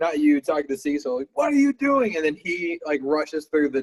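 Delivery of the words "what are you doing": shrill, very high, angry yelled scream. Voicing an NPC who sees a player run upstairs: screaming at someone. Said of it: "screams at you".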